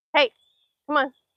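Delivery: high, loud yelled call. Calling the dog back along the path, yelling. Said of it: "Sorry if I'm yelling".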